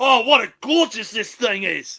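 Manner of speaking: put-on wildlife show narrator voice. Joining in on a retold wildlife show: Steve Irwin impression. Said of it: "he's like".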